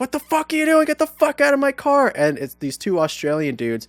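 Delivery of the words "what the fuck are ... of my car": acted, shrill, very high, furious screaming rage. Retelling how a driver pulled over after being thrown up in his car: imitating driver screaming. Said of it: "He's fucking screaming at me".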